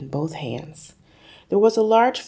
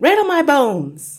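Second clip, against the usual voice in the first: shrill, very loud, very high ghostly voice; 9 semitones higher, 8 dB louder than usual. Narrator reading a story, a parrot speaks: spooky voice imitation. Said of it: "giving a wonderful imitation of a spooky voice".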